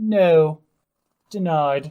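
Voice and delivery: loud, lofty, elevated, formal ceremonial proclaiming diction. Showing how the wand of denial refuses a child: elevated formal diction. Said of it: "we take an elevated form of diction".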